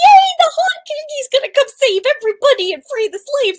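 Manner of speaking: put-on thrilled gush, very high-pitched, excited. Retelling a first reaction to the next book's title: retelling own excited reaction. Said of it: "initially I was so excited".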